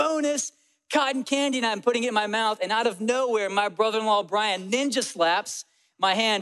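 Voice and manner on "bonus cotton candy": put-on, high-pitched, shouted-out yell. Retelling grabbing floating cotton candy at the fair: imitating own yell. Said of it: "and I yell".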